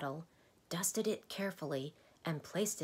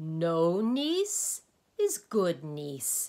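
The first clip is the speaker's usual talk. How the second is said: very loud, very slow, drawn-out booming laughing roar; 9 dB louder than usual. Interrupting the doctor's story about him, roaring. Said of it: "roared the Dynne again".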